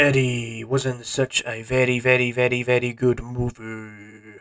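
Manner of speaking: deep, very slow, drawn-out monster growl. Opening line of a movie review done in a Venom voice. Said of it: "I tried my best to do that Venom impression".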